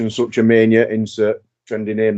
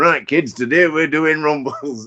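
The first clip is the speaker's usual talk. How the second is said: pitched-up, bossy coach voice; 5 semitones higher than usual. Retelling Hogan coming out at the show and addressing everyone like kids: Hulk Hogan as wrestling trainer. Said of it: "treats the whole situation legitimately like a wrestling school trainer".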